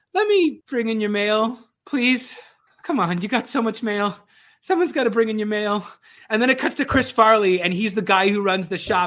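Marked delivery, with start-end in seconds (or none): 0.1-5.8 put-on awkward, off-putting boy voice, higher and louder. Retelling a comedy sketch where a boy begs customers: imitating Adam Sandler's off-putting boy. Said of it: "this incredibly off-putting boy".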